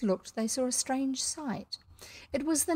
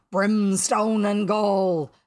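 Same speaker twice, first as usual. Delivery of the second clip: loud, thundering, furious roar of rage; 8 dB louder than usual. Hook, told the crew followed his own orders, thundering with rage. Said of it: "thundered Hook".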